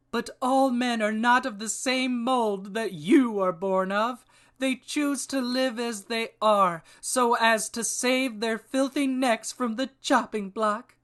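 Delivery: very high, disgusted, contemptuous tone. Reading a story aloud, voicing Carthena's reply to Grigner, in a disgusted tone. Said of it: ""It's the tale of Grignr, a foul-mouthed barbarian warrior who is trying to escape the dungeons of Evil Overlord Agaphim and rescue a young woman named [name] from a pagan cult who want to sacrifice h".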